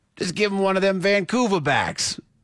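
put-on New Jersey accent. Joking about workers at a human factory, New Jersey accent. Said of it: "That was your New Jersey accent?".

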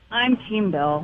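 sounding defeated. A caller greeted on air says which side they're on, sounding defeated. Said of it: "You sound so defeated".

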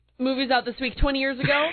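speech broken up by hiccups throughout. Speaking to co-hosts during a movie discussion, hiccuping. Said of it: "my hiccups are really throwing me off".

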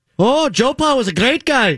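fake Irish accent, very high pitch. Answering a request to imagine a football player talking: put-on Irish accent. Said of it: "Could you imagine it with an Irish accent?".

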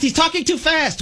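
mocking, high, whiny put-on voice.

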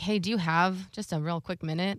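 put-on worrying tone. Retelling a phone call from the boss, imitating the boss's worrying tone. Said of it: "the tone of his voice when he called".

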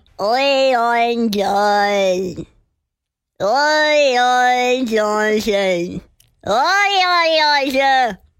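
very slow talking-cat voice, long oi's. Answering a question about a favorite cat video, imitating a talking cat video. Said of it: "my impersonation of that video".

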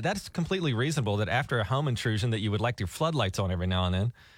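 ordinary delivery

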